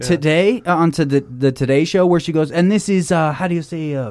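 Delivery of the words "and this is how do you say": mock Spanish accent, higher. Imitating how Alec Baldwin's wife talks on the Today Show: put-on Spanish accent. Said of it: "where she's talking like this".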